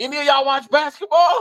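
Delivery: very high, loud shouted yell. Retelling calling out to people at a bar: imitating his own yell. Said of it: "Like, yelling, you know, like that".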